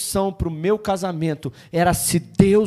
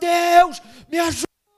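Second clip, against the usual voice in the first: put-on very high howling cry; 11 semitones higher, 3 dB louder than usual. Retelling throwing oneself on the floor crying out to god: retelling own shout for help. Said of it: "eu gritava".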